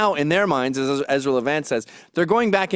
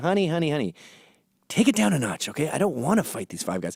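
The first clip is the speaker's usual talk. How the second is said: calm, soothing, placating tone; 4 dB quieter than usual. Retelling trying to calm a girlfriend when a guy in a bar wants to fight: retelling a soothing plea. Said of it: "you're trying to soothe the situation".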